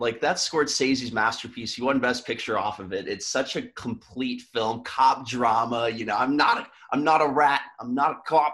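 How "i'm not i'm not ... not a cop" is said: clumsy, bad put-on Boston accent, pitched up. Quoting a character from a cop drama film, in a bad Boston accent. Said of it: "Was that your Boston accent?".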